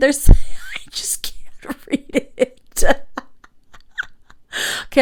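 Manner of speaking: talking through laughter. Trying to read hard cursive aloud, laughing while talking. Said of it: "I'm gonna stop, uh, laughing there".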